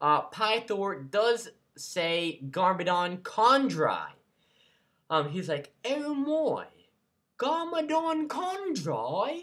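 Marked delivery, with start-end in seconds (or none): 5.8-9.4 put-on British accent, higher, slower. Explaining an episode to viewers, the speaker quotes Pythor in Pythor's British accent. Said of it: "in his awesome British accent".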